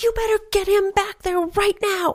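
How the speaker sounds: mock screaming, pitched very high. Retelling a woman in a waiting room yelling at a nurse: imitating a woman screaming.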